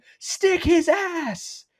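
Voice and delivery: mock, very high, cartoonish screamed voice. Retelling how a man screamed at someone getting ready to hit, Miguel Chavis screaming impression. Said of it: "Miguel Chavis screams at him".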